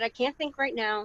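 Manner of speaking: usual speaking voice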